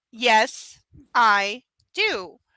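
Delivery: said slowly, at a slow pace. The narrator answers him back, saying it slowly as if to a child. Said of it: "I say it slowly as if he's a child".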